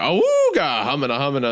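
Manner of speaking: swooping, leering cartoon coyote voice. Describing a cartoon coyote ogling someone, imitating a cartoon coyote. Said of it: "when the coyote's like".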